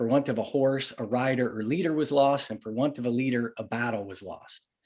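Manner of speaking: ordinary talk, nothing marked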